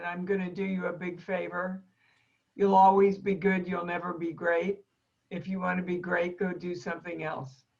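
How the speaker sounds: put-on very thick, heavy German accent, laid on thick. Recalling what a woman told her after her last performance: very thick german accent. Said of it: "in a very thick German accent".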